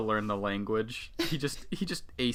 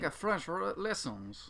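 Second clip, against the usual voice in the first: put-on French accent, much quieter; 8 semitones higher, 3 dB quieter than usual. Joking about starting a french restaurant, trying out a french accent. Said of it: "That's my best French accent".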